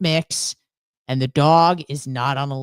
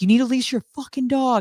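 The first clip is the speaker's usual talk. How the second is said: put-on furious, heated, fast, high-pitched screaming; 8 semitones higher than usual. Retelling an argument with his neighbor about the dog, retelling screaming at neighbor. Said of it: "I'm screaming at him".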